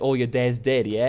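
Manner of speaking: put-on Australian accent. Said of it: "But it was like".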